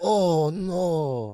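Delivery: "oh no", with the "no" stretched and drawn out. Retelling how immigrant parents reacted to a death: imitating immigrant parents. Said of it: "They're like".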